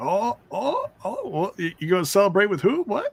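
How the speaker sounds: flustered, surprised reaction.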